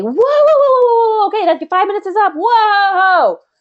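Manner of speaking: very high, loud yelling, "whoa" stretched. Showing a coach how to interrupt a rambling client: yelling to interrupt. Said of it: "You might have to yell and say".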